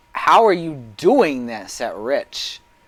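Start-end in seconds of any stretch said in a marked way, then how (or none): 0.2-1.9 calling out across a distance. A narrator voicing a character who shouts a question at another: shouting. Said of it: "And she shouts".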